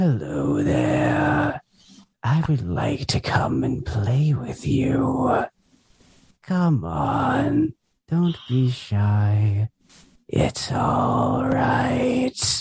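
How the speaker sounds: high, sing-song, eerie, unsettling coaxing voice, drawn out. Asked for a favorite voice-acting voice, a guest shows off a creepy voice. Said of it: "I'll hear that in my nightmares".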